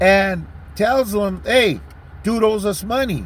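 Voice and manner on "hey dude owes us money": normal talking voice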